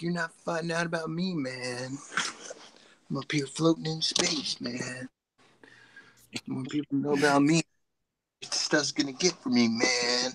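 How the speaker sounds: put-on space turtle character voice, hushed. Speaking for the space turtle toy blocking their computer, space turtle impression. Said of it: "That's my space turtle impersonation".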